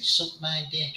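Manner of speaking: put-on little soft, squeaky child's voice. Retelling a gaming story, quoting a kid who joined the group: squeaky voice. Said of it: "this sort of squeaky voice saying".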